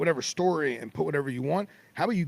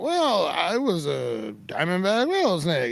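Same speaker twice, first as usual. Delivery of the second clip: put-on loopy talk, much slower, higher; 3 semitones higher, 5 dB louder than usual. Retelling a snakebite patient answering a reporter, imitating loopy speech. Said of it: "he's all loopy".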